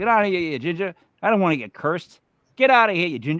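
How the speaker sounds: mock, jokey, playful teasing tone. Retelling shooing away a redheaded worker in character: retelling own mock teasing. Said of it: "I'm going".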